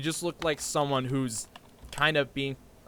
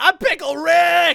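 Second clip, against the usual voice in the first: shouted at top of lungs, loud high-pitched scream; 12 dB louder than usual. Retelling a guy jumping on a table: imitating someone screaming. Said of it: "he's screaming from the top of his lungs".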